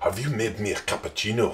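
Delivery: soft put-on Italian accent. Teasing a listener by mimicking how they spoke this morning; imitating someone's Italian accent. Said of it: "I don't sound like that Italian guy".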